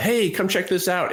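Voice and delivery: high projected voice. Retelling how a potential buyer called out at the property: imitating someone yelling out. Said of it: "he yelled out".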